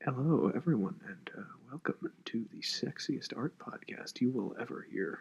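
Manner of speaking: whispered, breathy, put-on sultry seductive voice. Welcoming listeners after being asked for a sultry voice: put-on sultry voice. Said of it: "Pull out your sultry voice".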